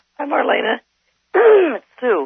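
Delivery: croaky, sleepy voice with swooping pitch. A caller just up from a nap greeting the host, losing voice, hoarse. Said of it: "you're losing your voice".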